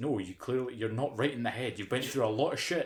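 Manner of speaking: ordinary delivery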